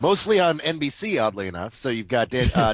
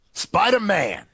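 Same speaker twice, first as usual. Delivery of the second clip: jive-style delivery, higher; 8 semitones higher than usual. Announcing the next topic to the other speaker: jive-style delivery. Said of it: "you kind of said it in a jive kind of way".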